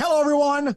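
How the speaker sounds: put-on very high, vintage old-school broadcast announcer voice. Retelling how announcers always opened back in the day: old-school announcer voice. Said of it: "back in the day, it was always".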